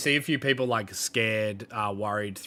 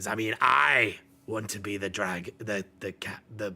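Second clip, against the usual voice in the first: louder pirate captain voice. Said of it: "Ralmar kind of cuts through and goes".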